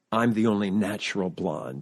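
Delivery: mock whisper. Retelling how the woman introducing the four of them spoke to the audience, imitating a whisper. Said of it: "she says in a whisper to the audience".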